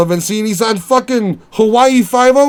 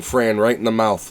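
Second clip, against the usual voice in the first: ordinary talk, nothing marked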